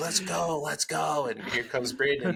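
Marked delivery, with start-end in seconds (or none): 0.0-1.3 pitched-up, drawn-out urging yell. Retelling a coach yelling at a runner who fell behind: imitating someone yelling. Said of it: "yelling at him".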